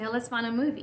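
ordinary talk, nothing marked

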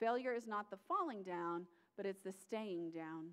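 falling leaned on softly.

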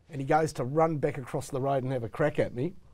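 ordinary talk

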